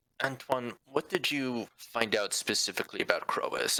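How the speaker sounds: half-hushed voice that still carries. Asking another character what was found out, in a hushed tone. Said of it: "say this in a little bit of a hushed tone".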